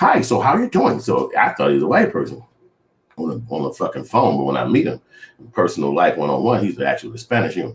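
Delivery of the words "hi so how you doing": very high-pitched voice. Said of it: "So he got that dialect".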